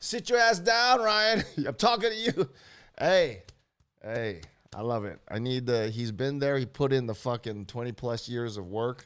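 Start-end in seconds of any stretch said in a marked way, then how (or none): 0.0-2.5 scolding yell, pitched very high. Acting out a man who yelled at the speaker, ryan, retelling a yell. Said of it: "He was on there yelling at me".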